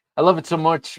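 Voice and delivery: cracking voice, breaking high and loud. Talking about a favorite knife in the collection, voice cracking. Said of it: "my voice just cracked".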